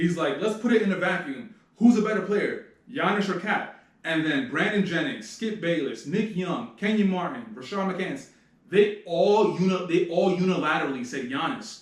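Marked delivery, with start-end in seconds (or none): 0.4-3.8 loud, called-out shouting. Recounting a sports debate show, imitating Skip Bayless shouting. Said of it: "he shouts out the question".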